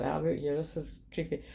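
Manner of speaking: ordinary talk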